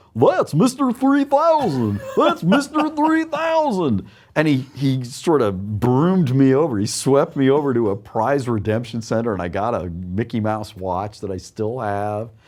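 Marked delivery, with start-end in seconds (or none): 0.2-4.1 very high, swooping, silly put-on goofy voice. Recounting a sweeper's announcement after alarms went off, in a goofy voice. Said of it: "says in this goofy voice".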